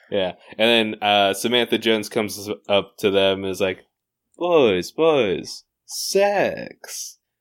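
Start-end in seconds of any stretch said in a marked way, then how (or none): 4.3-7.1 high sales voice, pitch swooping up and around. Pitching a deal to two men in a Samantha Jones impression. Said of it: "That was a halfway decent impression".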